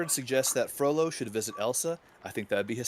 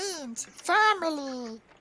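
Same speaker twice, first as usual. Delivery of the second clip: very high voice, family drawn out; 12 semitones higher than usual. Quoting a line while discussing Lilo and Stitch: Stitch impression. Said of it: "That is not what he sounds like".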